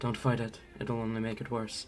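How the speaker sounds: close, hushed half-whisper. Voicing a hidden figure grabbing a character from behind: half-whispering in someone's ear. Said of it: "a voice whisper in your ear".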